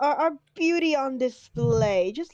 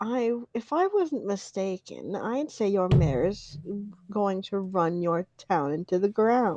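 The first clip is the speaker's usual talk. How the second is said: hushed, low half-whisper with no voice; 5 semitones lower, 4 dB quieter than usual. A character leans in toward another character and speaks in a half-whisper. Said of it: "as he whispers".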